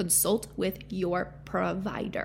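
very slow, drawn-out, each word spelled out separately. Addressing listeners about taking supplements during pregnancy: very slow delivery. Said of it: "Did I say that slowly enough for you?".

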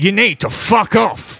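very high-pitched, hostile, angry delivery. One of two figures outside a door answers the visitor, angry. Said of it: "You sound very angry".

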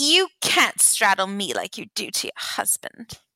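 horrible, clumsy, badly put-on British accent. Retelling what a woman said at her birthday party, in a horrible british accent. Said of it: "Horrible British accent".

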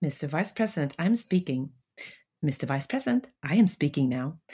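retorting tone with a smile in the voice. Quoting the vice-presidential debate line with a smile: imitating Kamala Harris speaking with a smile. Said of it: "och med det här leendet".

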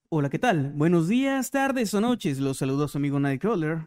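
storyteller narrator delivery. Reading out a greeting that was requested: narrator voice. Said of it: "con voz de narrador".

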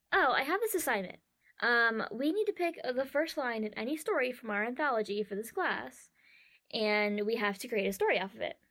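ordinary delivery

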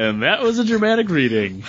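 ordinary talk

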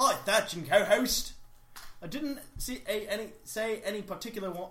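put-on Australian-accented voice. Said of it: "Do it as Steve Irwin".

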